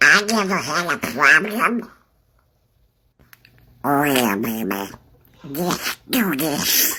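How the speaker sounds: put-on quacking cartoon duck voice. Challenging listeners to recognize a famous character, a speaker performs: Donald Duck impression. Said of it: "that is your impression of Donald Duck".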